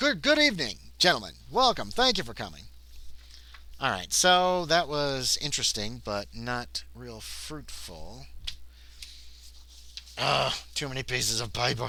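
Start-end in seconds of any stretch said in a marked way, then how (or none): 0.0-2.6 put-on high, loud transatlantic accent. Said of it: "He talks with a transatlantic accent".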